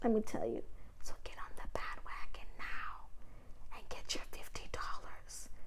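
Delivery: very soft, hushed, breathy whisper. Promoting a referral program in a recorded video, whispering. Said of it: "I don't know why I'm whispering".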